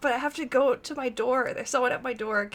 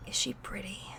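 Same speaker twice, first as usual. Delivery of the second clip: very quiet, breathy, hushed stage whisper; 5 semitones lower, 10 dB quieter than usual. Telling of leaning in to ask him a question, stage whisper. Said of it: "I'm just gonna like whisper, stage whisper to him".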